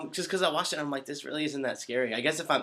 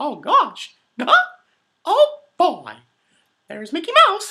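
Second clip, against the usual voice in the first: loud, high, bouncy squeaky voice; 14 semitones higher, 13 dB louder than usual. Asked by a fan to do it, the speaker performs a Mickey Mouse voice. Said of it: "could you please do Mickey Mouse's voice".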